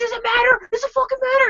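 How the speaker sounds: very high, loud screamed delivery. Retelling an argument in the snow with a man freaking out: retelling screaming back. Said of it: "And I'm screaming back at him".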